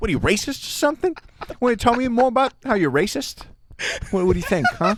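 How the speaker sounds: very high, put-on New York accent, laid on. Acting out a talk show host asking questions: Jimmy Fallon in New York accent. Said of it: "Jimmy Fallon in a New York accent".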